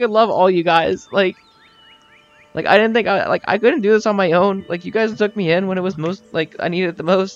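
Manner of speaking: high-pitched, full-on bawling through hard sobs. Voicing a crying character thanking the group: acted bawling. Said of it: "Darius is, like, bawling".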